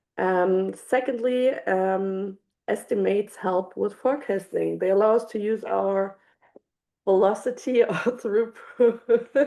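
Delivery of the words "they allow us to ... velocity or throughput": speaking while laughing through the words. Explaining estimation in a webinar, stumbling on a word: laughing while talking. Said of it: "I'm so sorry that I'm laughing".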